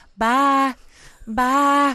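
southern drawl on bye. Describing how she now says bye, the speaker imitates her southern drawl. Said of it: "she says it with a real southern drawl".

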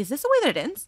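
high, sudden, acted panicked voice. Retelling being sucked toward a passing train: retelling own panic. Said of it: "And I start panicking".

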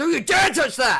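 loud shouting. Voicing a game character telling someone not to touch it: shouting. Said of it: "I shouldn't have shouted like that".

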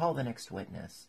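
ordinary delivery, nothing marked

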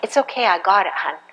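kind, soothing, soft, gentle tone. Showing how to answer someone acting in their old nature: gentle tone. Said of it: "just to speak in a gentle tone".

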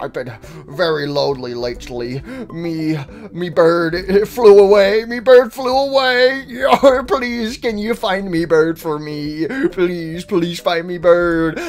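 mournful, sad pirate-talk voice. Voicing a lonely character begging for help finding a bird: sad Rockstar Foxy voice. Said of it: "Why are you so sad?".

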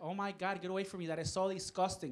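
ordinary talk, nothing marked

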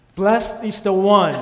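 loud proclaiming shout. Leading a congregation in repeating the crowd's cry: loud shouting voice. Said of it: "use your singing voice with me".

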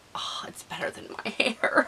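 soft, high, delighted whisper.

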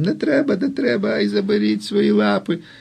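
put-on very high, shrill, creaky, rasping girlish shriek. Being pulled up from his knees, he protests: shrieking in a girlish voice. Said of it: "починає верещати дівочим голосом".

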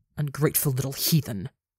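hissed through the teeth. Reading her reply to Rambu's outburst: hissed. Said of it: "She hisses".

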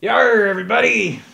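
very high, loud, rough pirate voice. Opening a game video on Talk Like a Pirate Day, greeting everybody in pirate voice. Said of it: "It's Talk Like a Pirate Day!".

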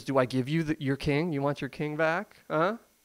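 put-on jeering, scornful, mocking taunt. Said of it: "He's mocking them".

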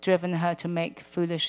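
plain reading voice

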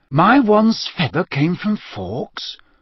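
astonished, amazed disbelief in a high-pitched voice. Harry, hearing about the phoenix feather in his wand, speaks up amazed.

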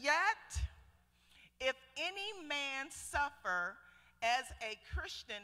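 slow, halting, deliberate word-by-word reading. Speaker reading a numbered verse aloud to listeners, reading slowly. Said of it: "I got to read this slow".

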